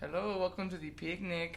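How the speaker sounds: put-on Mexican accent. Speaker retells doing an accent a man asked for, mexican accent. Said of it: "didn't you just ask me to say a Mexican accent?".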